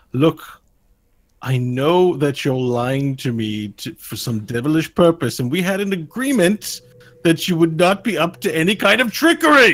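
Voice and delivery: fed-up, worn-out exasperation, slow and high. Voicing a creature who suspects the players of deceiving it; exasperated. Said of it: "You hear sort of an exasperated sigh".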